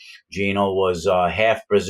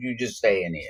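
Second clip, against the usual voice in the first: put-on Brazilian accent, soft; 6 dB quieter than usual. Retelling a prison memory, quoting what a fellow prisoner told him, in a Brazilian accent. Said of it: "this Brazilian accent".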